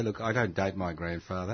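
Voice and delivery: plain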